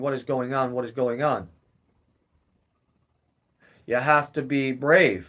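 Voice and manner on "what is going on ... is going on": normal talking voice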